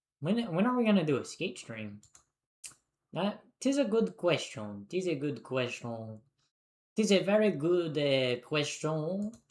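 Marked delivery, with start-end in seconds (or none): 3.6-9.3 jokey, fake, put-on French accent. Answering a chat question about a skate stream: put-on French accent. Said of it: "I'm speaking like a French person".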